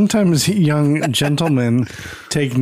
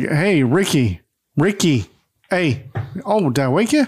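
put-on surprised voice. Retelling how a character wakes a sleeper: imitating Fred, surprised Ricky's asleep. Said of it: "And he's like".

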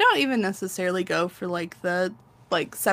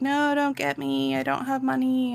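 light, pitched-up, jokey, laughing-it-off tone; 6 semitones higher than usual. Retelling how he answered a commenter's warning about lawyers; retelling a joking reply. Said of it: "he was jokingly like".

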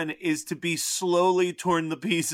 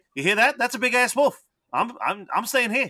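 put-on Australian accent, pitched much higher; 6 semitones higher than usual. Describing a favorite movie character and quoting him, [name]'s Australian accent. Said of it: "your Australian accent is probably your best".

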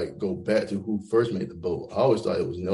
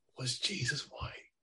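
hushed, barely voiced whisper; 6 semitones higher, 12 dB quieter than usual. Asking a provocative question to the others: whispering. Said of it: "I'm whispering when I said that".

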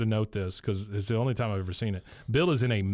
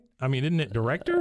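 ordinary delivery

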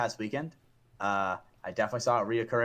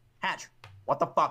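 put-on angry voice, higher pitch; 5 semitones higher than usual. Retelling how Logan reacted to a shooting in the game: Logan impression. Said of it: "that was a good impression of, uh, Logan".

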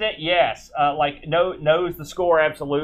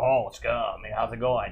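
low, hushed, husky voice; 6 semitones lower, 7 dB quieter than usual. Describing a game cutscene, voicing a character running up the stairs, husky voice. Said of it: "he has this real husky voice".

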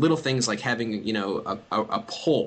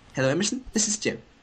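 put-on very clipped British accent, pitched up; 5 semitones higher than usual. Retelling a phone call, the speaker voices the caller, imitating Jim's clipped British accent. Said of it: "very clipped British accent on the other end of the line".

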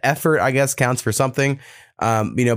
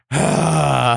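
imitated big sigh. Retelling how the partner reacts to the dishes: imitating a big sigh. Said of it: "some big sigh".

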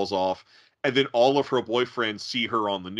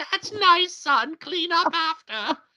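very high put-on woman's voice. Retelling a man off camera voicing his mother's reply: imitating a woman's voice. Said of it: "a woman's voice going".

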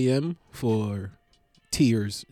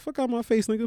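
put-on very high, mouthy, rude little baby voice; 10 semitones higher than usual. Acting out a baby being picked up: acting as a rude baby. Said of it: "Baby be like".

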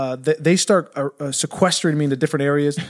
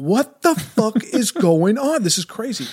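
bewildered freakout, pitched up and drawn out; 7 semitones higher than usual. Retelling being told nobody can go outside, retelling freaking out. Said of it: "I'm like freaking out".

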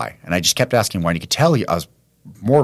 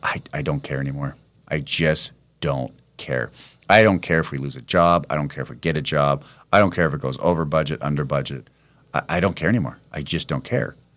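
put-on flat monotone, lower pitch; 3 semitones lower, 3 dB quieter than usual. Retelling what a friend said on the phone: imitating a monotone voice. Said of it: "monotoneness in his voice".

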